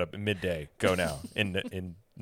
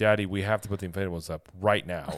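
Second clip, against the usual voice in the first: mock stern, very strict no-nonsense tone; 3 dB louder than usual. Retelling a daughter's demand to put the inflatables up: imitating a stern demand. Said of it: "in a very stern voice that".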